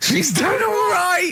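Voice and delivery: slow, very high put-on old-timer voice. Repeating another speaker's words back: put-on sixty-year-old way of talking. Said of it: "Why do you talk like you're sixty years old?".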